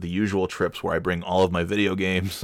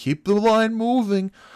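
acted, very high, drawn-out shouting; 4 dB louder than usual. Retelling an airport worker at security: imitating someone yelling. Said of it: "is yelling".

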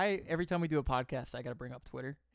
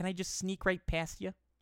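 jokey, put-on, pitched-up Midwestern Michigan accent; 5 semitones higher than usual. Reading out a joke tweet about how Michigan people talk: put-on Michigan accent. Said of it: "Michigan accent".

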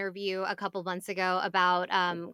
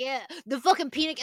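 mock, acted yelling; 6 semitones higher than usual. Retelling a birthday party, acting out how he yelled at her: retelling a yell. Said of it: "He's yelling at her".

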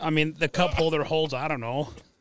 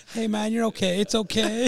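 mock motherly soothing, much higher; 6 semitones higher than usual. Retelling how someone rubbed his back to comfort him: mock-soothing, like a mother. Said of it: "Like a mother would do to their kid".

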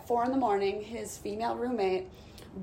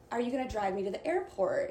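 plain

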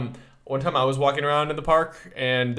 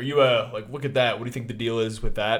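normal talking voice

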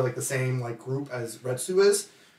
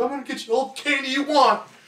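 very high, shrill, blubbering, sobbing voice; 12 semitones higher, 3 dB louder than usual. Retelling a character's promise of candy: imitating Retsu crying. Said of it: "Retsu just breaks down crying, like".

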